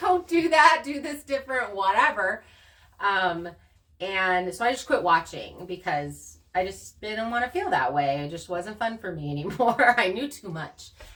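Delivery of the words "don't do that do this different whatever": loud, high-pitched yelling. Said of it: "I'm yelling at the T V".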